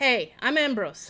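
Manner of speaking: put-on happy shout, loose Western accent, words running together. Voicing a hungover character greeting newcomers: cheerful shout in loose Western accent. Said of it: "he shouts cheerfully in English".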